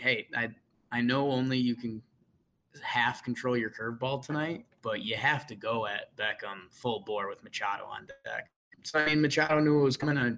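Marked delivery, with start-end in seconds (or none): none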